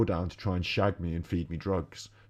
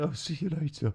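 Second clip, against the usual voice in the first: meek, wimpy, shrinking, pitched-up little voice; 8 semitones higher, 3 dB quieter than usual. Calling him a wimp and mocking the way he said it: mocking a wimpy tone. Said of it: "The way he said".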